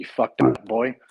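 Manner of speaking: heavy Irish brogue. Quoting the chief who stood there reading a paper, in a thick Irish accent. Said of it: "he had this thick Irish accent".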